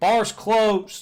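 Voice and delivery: loud, high-pitched call. As the front desk worker, calling out to guests at the bar: shouting. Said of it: "a voice kind of shout at you".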